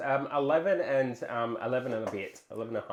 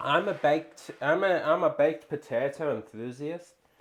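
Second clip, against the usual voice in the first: slow, odd, made-up half-Scottish, half-Southern put-on accent. Saying what kind of potato fan one is, in an unplaced put-on accent. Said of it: "I don't know what accent that was".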